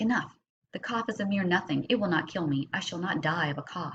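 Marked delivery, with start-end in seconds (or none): none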